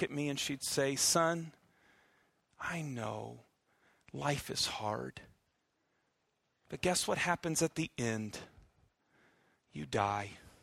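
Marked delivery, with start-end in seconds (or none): 0.9-10.3 soft, sugary-sweet, condescending motherly voice. Speaker retells what their mother would say to them, imitating mom's sweetest motherly voice. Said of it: "in her sweetest, kindest, motherly voice, in a kind of condescending way".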